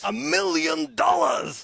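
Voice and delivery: put-on American accent. Showing the one phrase that can be said in an American accent. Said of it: "I can do one phrase still".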